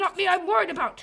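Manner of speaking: shouting. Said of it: "I didn't mean to shout".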